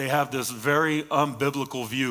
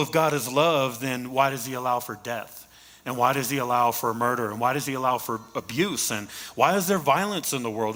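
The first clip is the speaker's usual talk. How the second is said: ordinary talk, nothing marked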